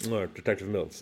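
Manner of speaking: words rolled around a boiled sweet in mouth. Retelling a film scene where a detective introduces himself: imitating Brad Pitt talking around a sweet. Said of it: "talking around the suite".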